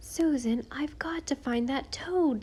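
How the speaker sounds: desperate, pleading, at wits' end. Caught at night by a woman carrying a candle, he answers her, desperate. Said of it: "said Walter desperately".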